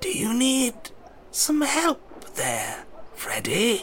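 thin, swooping, very high voice. Game master voicing Mr. Calcifer, speaking to Freddy from behind, in a thin Calcifer voice. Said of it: "a thin voice comes from behind".

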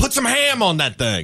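high yell with wide pitch range.

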